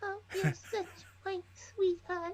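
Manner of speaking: very high, soft, cutesy voice. Recalling a favorite movie scene, quoting an actress: Sarah Jessica Parker impression. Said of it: "Why does she talk like the girl from Little Shop of Horrors?".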